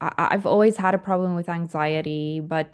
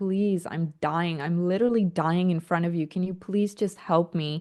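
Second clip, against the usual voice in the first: put-on tearful, crying pleading tone. Retelling begging for help while lying on the floor: imitating a tearful plea. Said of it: "on the super filthy floor crying".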